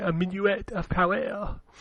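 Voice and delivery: put-on French accent. Saying a game title the way it is spelled: mock Frenchie accent. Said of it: "You sound like Frenchie".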